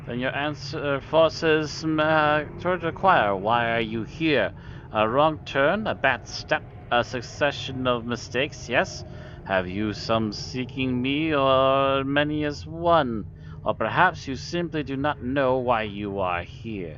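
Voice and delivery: slick insinuating creature voice. A game master voices a half-man, half-rat creature questioning an intruder, oily and insinuating. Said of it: "You see a half-man, half-rat hybrid. / You see a half-man, half-rat hybrid. Its red eyes gleam with a certain cunning, / and the voice issues from its mouth is oily and insinuating. / and the voice is".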